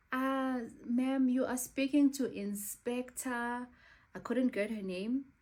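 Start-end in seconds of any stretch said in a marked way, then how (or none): 0.8-3.6 put-on slow, high-pitched, thick, heavy West African accent. Retelling a phone call, voicing the inspector, very thick West African accent. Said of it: "she spoke in a very thick West African accent".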